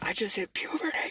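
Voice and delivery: very high-pitched, thrilled, excited blurt. Retelling what he said to his roommate, retelling an excited line.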